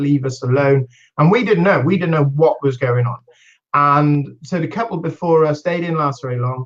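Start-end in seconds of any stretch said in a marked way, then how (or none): none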